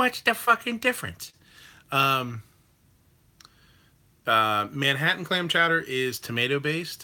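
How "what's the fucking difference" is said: very high, pitched-way-up put-on voice. Answering a question about chowder while imitating too hotty. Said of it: "That's my too hotty impression".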